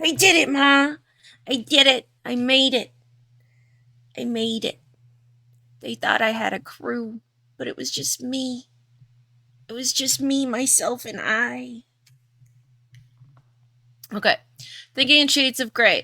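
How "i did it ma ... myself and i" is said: attempted Chicago New York accent. Performing a short monologue addressed to Ma in a Chicago, New York accent. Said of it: "that was my best Chicago, New York accent".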